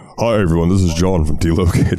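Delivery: announcer-style radio delivery. Retelling how a radio host introduces himself: imitating John from Delocated. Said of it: "he'll be like".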